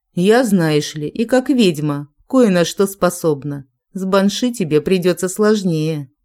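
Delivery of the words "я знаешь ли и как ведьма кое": usual speaking voice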